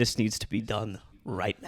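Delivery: put-on flat deadpan delivery. Retelling how a friend suddenly stopped laughing: imitating Brooks going stone-faced. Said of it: "he goes stone-faced".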